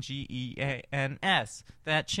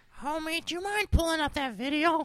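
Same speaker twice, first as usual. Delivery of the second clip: very high, put-on cartoon voice. Redoing a request in a Marge Simpson voice. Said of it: "And Marge Simpson".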